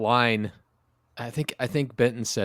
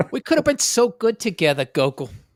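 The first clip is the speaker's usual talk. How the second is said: very high-pitched put-on Queens accent; 10 semitones higher than usual. Telling another speaker how an anime character talks to Gogo, in a Harley Quinn Queens accent. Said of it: "she has a Harley Quinn fucking Queen's accent".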